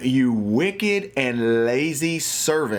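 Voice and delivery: slow, ticked-off voice, words dragged out. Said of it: "the ruler got ticked off".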